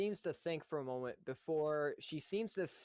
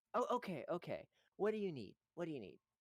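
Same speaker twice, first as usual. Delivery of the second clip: put-on placid, dazed, calm, peaceful little girl voice; 4 semitones higher than usual. The storyteller voices a poor little girl asked for help, peaceful little girl voice. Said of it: "A look of peace comes across this poor little girl".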